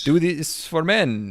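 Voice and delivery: failed put-on Indian accent. Imagining an Indian scammer entrepreneur pitching a product, in a bad fake Indian accent. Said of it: "that's not an Indian accent".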